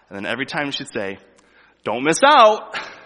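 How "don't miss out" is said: very high, very loud, stretched-out obnoxious call. Retelling a store worker's repeated sale announcements to shoppers, drawn out and obnoxious. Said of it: "real drawn out, you know, kind of obnoxious kind of sound".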